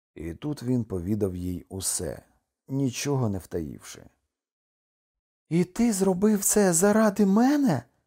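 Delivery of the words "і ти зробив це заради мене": high, cried-out exclamation full of disbelief. Kokua responds after he tells her everything; exclaimed. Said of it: "вигукнула Кокуа".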